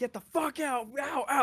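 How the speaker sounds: high, screaming drill-sergeant yell. Retelling drill sergeants storming the bus, imitating a drill sergeant screaming. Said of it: "started screaming at everybody".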